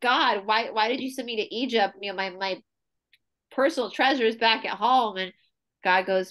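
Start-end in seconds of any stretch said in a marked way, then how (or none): none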